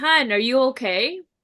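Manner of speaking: shouting. Retelling the husband yelling up the stairs: imitating husband yelling. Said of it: "my husband yells up to me".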